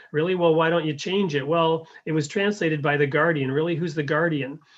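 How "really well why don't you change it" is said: put-on sarcastic, mocking tone. Acting out a conversation, playing the one questioning the others: retelling a sarcastic retort. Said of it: "So so it's sarcastically".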